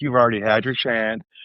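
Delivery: plain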